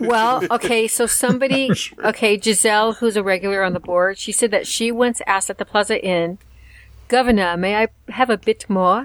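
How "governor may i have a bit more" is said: put-on British accent. Retelling a regular asking for more at the Plaza Inn, in her best British accent. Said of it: "in her best British accent".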